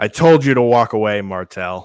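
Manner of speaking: booming character voice at full volume. Voicing Halex, who speaks up after a long silence: voicing Halex. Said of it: "you hear a different voice, that sounds like Halex".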